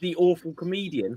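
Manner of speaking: normal talking voice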